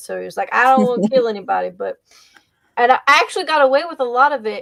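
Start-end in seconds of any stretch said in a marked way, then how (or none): 0.5-1.7 put-on country accent, character voice. Player recalling their Dungeons and Dragons paladin's lines, in a country accent. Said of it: "I used the country accent".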